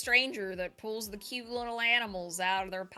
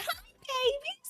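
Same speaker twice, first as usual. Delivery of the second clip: put-on very high, tiny little toddler voice. Acting out how her toddler would greet the babies: imitating her toddler. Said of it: "my toddler would be like".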